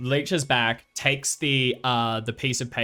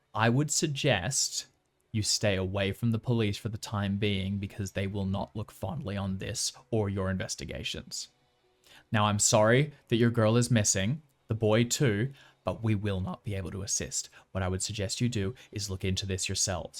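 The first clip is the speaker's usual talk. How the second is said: under breath, quieter and lower; 3 semitones lower, 4 dB quieter than usual. Game narrator voices an officer leaning in to the players, quietly under his breath. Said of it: "he's going to say very quietly under his breath".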